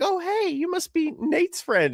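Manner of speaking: very high, sing-song put-on Southern accent. Imagining a friend visiting, imitating a southern girl. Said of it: "attractive Southern girl, and she's like".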